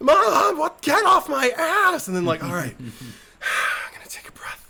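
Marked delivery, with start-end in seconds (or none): 0.0-2.1 shrill, piercing, very high, loud, drawn-out shriek. Retelling how she shrieks at her mom, imitating a shriek. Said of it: "she's just like shrieking at them".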